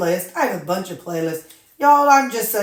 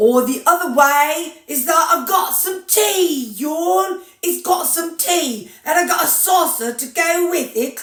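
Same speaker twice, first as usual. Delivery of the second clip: put-on country hillbilly accent, pitched up; 8 semitones higher than usual. Showing another way to say the same tea line, in a hillbilly accent. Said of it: "the hillbilly version of English".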